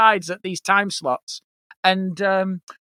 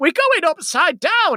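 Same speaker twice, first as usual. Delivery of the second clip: put-on very high, scared, frightened little child voice; 10 semitones higher than usual. A father retells his kid Olivia on an upside-down ride, imitating Olivia, frightened. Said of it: "Like literally just going".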